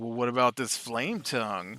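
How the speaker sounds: put-on sarcastic tone. Retelling a question put to him about an item, retelling a sarcastic remark. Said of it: "I sarcastically goes".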